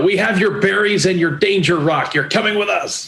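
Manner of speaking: shouting. Player kicks in the door and runs in at the occupant, shouting. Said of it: "I'm gonna run in and I'm gonna shout".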